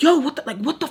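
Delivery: high, frustrated, fuming, furious outburst. Retelling how a man reacted to being pushed off: imitating a furious man. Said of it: "he's just, like, foaming at the mouth".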